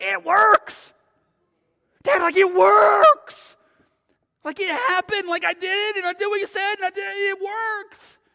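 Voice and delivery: shrill screaming outburst, very high and very loud. Retelling a son's phone call to his dad: imitating a screaming son. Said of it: "his son just starts screaming".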